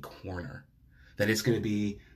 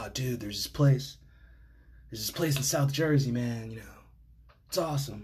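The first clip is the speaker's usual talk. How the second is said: put-on stoner voice, slower. Quoting a friend from back in the day, imitating a stoner friend. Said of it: "He talked like that because a lot of my friends back in the day were stoners".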